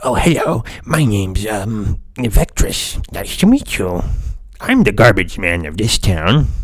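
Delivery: loud, belted-out, tiny dragon voice. Recommending kobolds for games, the speaker demonstrates one talking: Vectress kobold voice. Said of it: "Little little dragons that sound like this".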